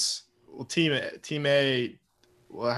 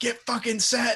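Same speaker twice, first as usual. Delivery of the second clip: put-on very high-pitched, barked yell; 11 semitones higher than usual. Retelling a quarterback yelling at his offense: Matt Ryan yelling. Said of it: "yelling at his own offense to get set".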